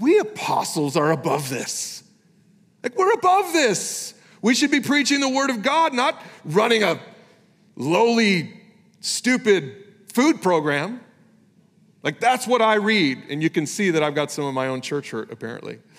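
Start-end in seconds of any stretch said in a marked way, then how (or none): 0.0-11.0 mocking, snide, snarky, pitched-up sneer. Voicing the apostles' remark the way the speaker reads it, mock-snarky. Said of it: "Doesn't that sound snarky to you?".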